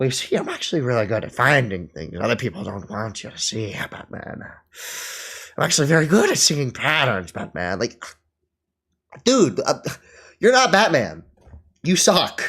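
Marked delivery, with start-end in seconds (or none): 0.0-7.8 put-on villain voice. Playing out a Batman scene, the villain's lines in Joker voice. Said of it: "I'll do my Joker voice".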